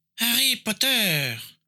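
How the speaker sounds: hissing voice, pitched very high. Narrator voicing Voldemort calling out to Harry Potter, Voldemort's hissing voice. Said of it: "appela la voix sifflante de Voldemort".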